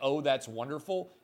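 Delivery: ordinary talk, nothing marked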